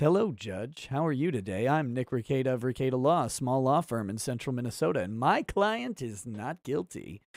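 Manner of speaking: low, soft, velvety, silky-smooth polished voice. Show listeners how you sound greeting a judge in a Zoom court meeting, in a silky smooth voice. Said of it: "Don't you want to sound silky smooth like I do?".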